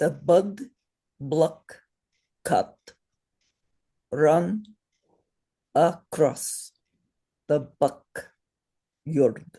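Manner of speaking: English with Sanskrit accent on the A's. The speaker demonstrates an english sentence said with a sanskrit accent. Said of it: "with Sanskrit accent".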